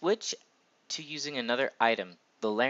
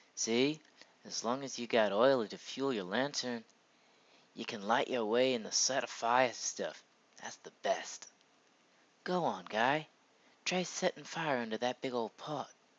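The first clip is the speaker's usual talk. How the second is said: mild, gentle merchant character voice; 4 dB quieter than usual. Gamer voicing a game character who sells lanterns; gentler character voice. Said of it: "a better, like, gentler voice".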